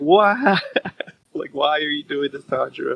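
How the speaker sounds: crying, wailing voice. Retelling a scene where a character pleads with Tanjiro, mock-wailing.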